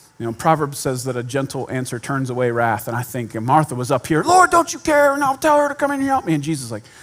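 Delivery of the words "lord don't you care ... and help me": heated, loud, high-pitched voice. Retelling the Bible story, acting out Martha hot and loud. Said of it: "Martha came in hot and loud".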